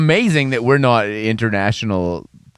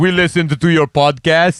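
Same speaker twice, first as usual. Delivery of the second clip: fake Polish accent, higher; 6 semitones higher, 4 dB louder than usual. Imitating police who heard the podcast: put-on polish accent. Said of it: "That's not even a Polish accent".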